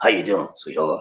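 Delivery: put-on deep bass man's voice. Imitating how Terry Fleming greets someone, in Terry Fleming's deep bass voice. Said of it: "Terry got that deep bass voice".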